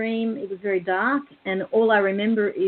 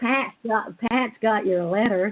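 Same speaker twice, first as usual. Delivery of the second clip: pathetic, bad put-on American accent. Retelling what a caller said on the phone, in a pathetic American accent. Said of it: "I'm going to put on a really pathetic American accent".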